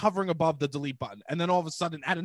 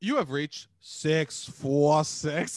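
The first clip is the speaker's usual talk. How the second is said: put-on automated voicemail voice, much slower. Showing how they answer like an automated voicemail greeting, automated voicemail voice. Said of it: "just do what the automated".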